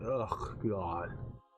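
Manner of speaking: disdainful, scornful voice with a scornful ugh. Voicing Tasha as she looks at the visitors: disdainful. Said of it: "almost disdain".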